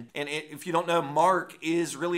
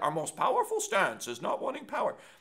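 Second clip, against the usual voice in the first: deliberately terrible sing-song character voice; 4 semitones higher than usual. Repeating a line the speaker says sounds like Yoda, in a bad Yoda impression. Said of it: "That was a terrible Yoda impression".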